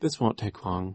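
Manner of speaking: ordinary delivery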